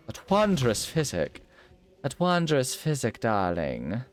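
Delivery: swooping, sing-song character voice, pitch up and down. Playing a game, repeating a phrase while talking like Moira: Moira Rose voice. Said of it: "I can't stop myself from talking like Moira".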